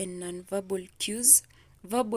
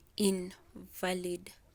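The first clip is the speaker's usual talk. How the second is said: stress punched on first syllable "in" of "invalid"; 4 dB quieter than usual. Explaining word stress with an example sentence: stress on first syllable of invalid. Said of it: "we're going to stress the first syllable".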